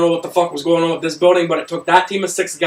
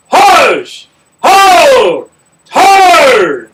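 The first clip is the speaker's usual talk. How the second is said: drill sergeant voice, much louder, higher pitch; 9 semitones higher, 10 dB louder than usual. Asked what their drill sergeant voice sounds like, the speaker shows it: drill sergeant voice. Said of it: "What does your drill sergeant voice sound like?".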